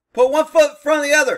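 loud, fast, barked officer-style delivery.

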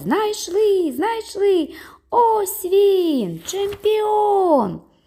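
very high, slow, drawn-out shouting, "він" stretched. People carrying the boy above the crowd call out, shouting. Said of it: "кричали".

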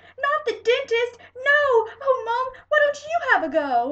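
very high, very loud begging shout. A child pleads with Mom, shouted, begging. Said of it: "I shouted".

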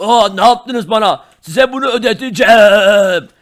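altered alien character voice. Acting out a scene, the speaker voices the green alien in a changed alien voice. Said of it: "yeşil uzaylı sesi bile değişmiş".

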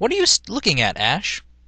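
confused, rising pitch. She notices a boy staring and asks him what he's looking at, confused. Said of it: "Misty asked with a confused".

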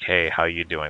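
put-on smarmy troll voice. Describing the anvil-banging troll in a game, doing his greeting in a put-on smarmy troll voice. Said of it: "this smarmy, like".

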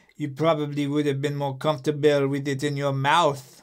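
put-on line spoken in a French accent. Reading a script scene aloud with a partner, playing Claire, French accent. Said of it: "I like the French accent".

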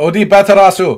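fake samurai-style Japanese accent. Reading out a Japanese monster name in a put-on samurai-style accent. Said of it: "Why did you do an accent?".

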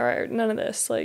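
ordinary talk, nothing marked

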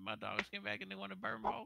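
put-on Cajun accent, very high pitch. Speaker riffs on a line for the soundboard in a cajun accent. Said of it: "Fucking Cajun accent".

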